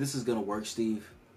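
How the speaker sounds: normal talking voice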